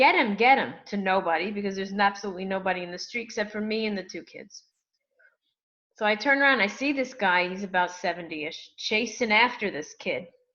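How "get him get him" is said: put-on old man voice, loud, raised yell. Retelling an old man yelling after a running thief: imitating a man yelling. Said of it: "he's yelling".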